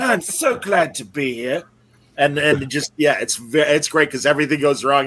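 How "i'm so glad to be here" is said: put-on drawn-out drunk-sounding voice. Retelling a sketch's drunk actor's line: drunk James Mason impression. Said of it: "Jon Hamm does a drunk James Mason".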